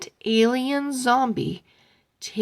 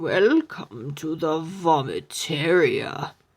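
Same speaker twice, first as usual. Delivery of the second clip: undead, low, groaning zombie voice; 5 semitones lower than usual. Narrator reads a voice behind the counter greeting three kids, in a zombie voice. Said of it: "a zombie voice".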